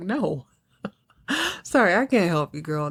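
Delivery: chuckling, laughing, amused dismissive tone. Retelling a man turning down a girl asking him for cash, retelling him laughing. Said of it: "he's kind of laughing".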